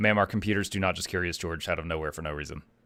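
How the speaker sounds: completely flat, very low, dead monotone. Speaker retells her own reply to a woman, completely monotone voice. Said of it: "my voice just went completely monotone".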